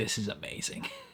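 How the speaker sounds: awestruck, hushed, breathy whisper. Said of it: "he's literally in awe".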